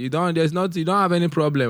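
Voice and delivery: high, loud, snapped-out dismissive tone.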